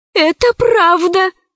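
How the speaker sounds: high, shaky, trembling, quavering voice. Zauri confirms what Alice has just told the officers, trembling voice. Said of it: "дрожащим голосом подтвердила Заури".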